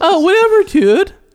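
shrill, blaring, very high, very loud dude voice. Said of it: "That's what he sounds like".

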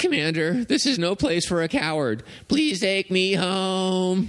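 pitch way up, "home" stretched out. Asked to show it, the speaker performs their Andy the Robot impression. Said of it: "doing my Andy the Robot impression".

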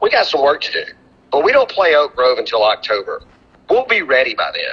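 dry, unruffled, deadpan, dead straight delivery. The speaker recalls a man's answer to his question about his team; retelling a deadpan line. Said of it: "Sam deadpanned me".

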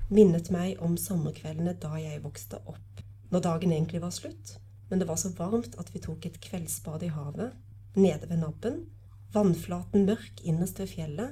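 ordinary delivery

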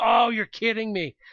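frustrated voice. Recounting being stuck behind a slow driver the whole ride home, retelling frustration. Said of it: "I was so frustrated".

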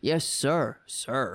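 eager, fawning, servile, bootlicking tone. Mocking someone saying sir in a fantasy: put-on servile reply. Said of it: "Everybody calls him sir in his fantasies".

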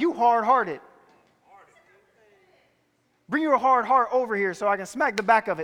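put-on voice in the manner of a grandmother. Picturing Paul saying it the way grandma did: imitating grandma. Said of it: "I picture him saying it like my grandma".

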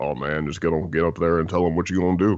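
put-on low, booming voice. Retelling someone's encouraging advice: imitating Percy's low booming voice. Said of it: "That booming voice from on high".

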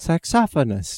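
"saxophonist" pronounced in a British accent. Saying a word after another speaker asks: british accent. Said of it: "And with a British accent".

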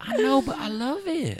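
pitched way up, slow, drawn-out stoned-sounding drawl. Retelling what a friend said about being high, Carlisle impression. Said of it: "that is a great Carlisle impression".

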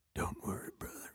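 very low, barely-there hushed whisper. Imitating how he says the line when his dog dies: imitating him speaking very low. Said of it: "he goes real low".

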